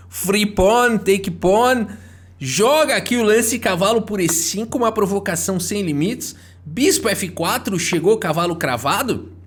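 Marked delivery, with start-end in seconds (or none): 0.1-1.8 fake Russian accent with a teasing tone. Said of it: "Sotaquezinho de russo pra tirar sarro".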